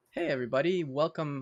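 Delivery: cracking, breaking voice. The host opens his live show, greeting everybody with his voice cracking. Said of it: "My my voice just cracked".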